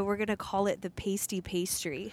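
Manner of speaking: usual speaking voice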